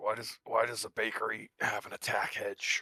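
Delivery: slow, drawn-out stage whisper. Whispering a question to Birch in character: whisper. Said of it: "I'll whisper to Birch".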